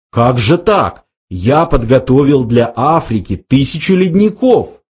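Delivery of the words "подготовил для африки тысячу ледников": plain reading voice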